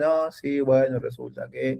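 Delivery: very slow, flat, listless, low-energy monotone drone. Advising to keep energy, imitating people who sound down: imitating a flat, low-energy speaker. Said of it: "hay gente que tipo es re abajo".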